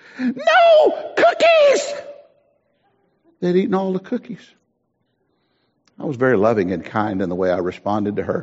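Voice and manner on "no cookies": mock top-of-the-lungs, very high screaming outburst. Retelling a church member's complaint about the nursery: imitating a woman screaming. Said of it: "she was screaming to the top of her lungs".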